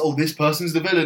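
ordinary talk

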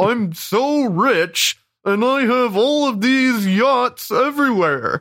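posh, lofty drawl, high, slow and grand. Imitating how Cameron sounds doing any impression: imitating Cameron's high-class impression voice. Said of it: "it always sounds like this".

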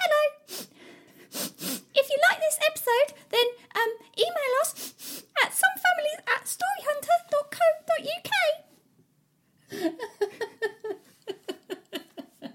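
put-on Cockney accent. Asked to do her Easter Bunny voice for the show's email plug: Cockney Easter Bunny voice. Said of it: "she's like a sort of like Cockney".

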